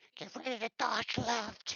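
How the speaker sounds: squeaky gnome-like voice. A voice never heard before speaks into the listener's ear: squeaky gnomish voice. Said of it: "probably something real squeaky, fucking gnomish".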